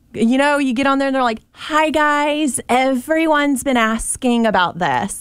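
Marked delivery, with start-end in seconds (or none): 1.5-5.2 put-on very slow, drawn-out Valley Girl drawl. Mimicking people who get on TikTok and greet their audience, in a Valley Girl TikTok voice. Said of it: "that like Valley Girl TikTok".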